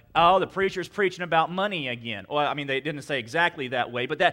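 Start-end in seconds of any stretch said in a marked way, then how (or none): none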